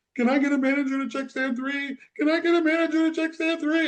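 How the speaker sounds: panicked, frightened, very high, acted out. Retelling a store worker paging a manager over the loudspeaker, imitating a very scared voice. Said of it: "in a very scared voice".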